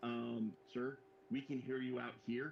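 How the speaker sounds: normal talking voice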